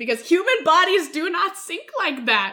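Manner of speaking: very loud, exasperated, swooping rant. Reviewing a scene of a character falling overboard, in a raised voice. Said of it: "I'm sorry for raising my voice".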